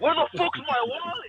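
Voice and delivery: put-on, very high-pitched screaming cry. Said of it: "this fool started screaming".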